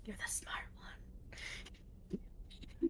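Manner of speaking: soft, very quiet, secretive whisper. Placing an invisible crown on another character's head: whispering. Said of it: "I'm just whispering".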